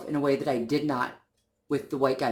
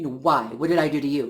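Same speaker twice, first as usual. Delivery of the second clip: angry, confronting woman's voice. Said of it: "So she got angry and she says".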